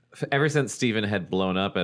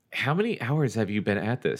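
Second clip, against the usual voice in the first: worried, higher pitch; 4 semitones higher than usual. Elizabeth asks Stephen, who keeps throwing the ball through the hoop, worried. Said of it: "She asked worriedly".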